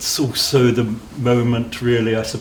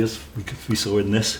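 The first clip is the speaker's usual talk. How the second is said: plain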